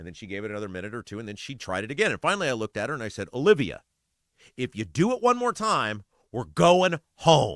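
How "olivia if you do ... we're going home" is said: slow, firm, no-nonsense stern dad voice. A father retells warning his daughter on the playground, in the dad voice. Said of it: "My kid knows the dad voice".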